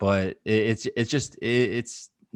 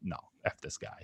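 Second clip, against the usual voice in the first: soft whisper with grudging, dismissive contempt. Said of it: "they're like".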